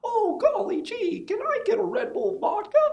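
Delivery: pitch going way up high and loud. Describing a guy whose real voice sounded this way, doing a Mickey Mouse voice. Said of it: "He sounded just like Mickey Mouse".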